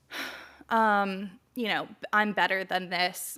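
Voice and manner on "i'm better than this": ordinary talk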